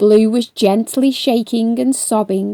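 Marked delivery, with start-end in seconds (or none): none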